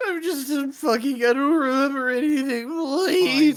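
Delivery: mock, whining, pleading tone. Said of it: "cried and begged and whined him".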